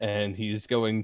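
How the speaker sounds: normal talking voice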